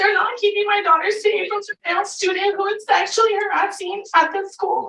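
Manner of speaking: upset, overcome with emotion. A parent appeals to the school board for help: emotional. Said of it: "I'm so emotional".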